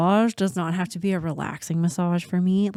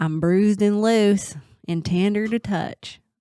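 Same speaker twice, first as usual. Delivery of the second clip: put-on southern US accent; 3 semitones higher, 3 dB louder than usual. Repeating what the other speaker just said about them, in a southern accent. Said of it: "I feel like I have to say that with like a southern accent".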